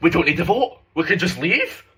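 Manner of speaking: put-on Scottish old woman voice. Retelling what an eccentric candidate said: imitating a Scottish granny. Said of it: "a proper Scottish granny".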